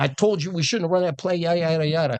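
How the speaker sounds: jawing, half-yelled, high-pitched mild yell. Retelling a brother yelling on the sideline after a failed play: imitating someone yelling. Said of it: "he's just yelling at me".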